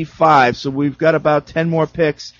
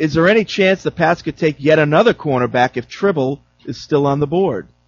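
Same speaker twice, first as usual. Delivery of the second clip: ordinary delivery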